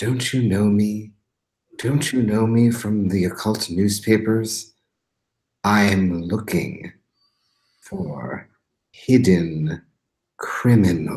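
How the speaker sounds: hushed, whispered voice. Playing a character showing a card to an officer, whispering. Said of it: "and I whisper".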